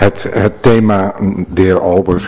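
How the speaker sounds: stumbling, stuttering over words. A speaker addresses the chair in a meeting, turning to another member, stuttering. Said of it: "ik ben aan het stotteren vanavond".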